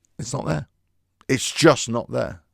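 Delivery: ordinary delivery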